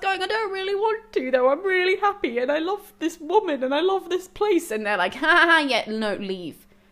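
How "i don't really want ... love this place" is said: high, tearful, whiny crying voice. Retelling a book character's reply to a god, imitating a character crying. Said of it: "He starts crying".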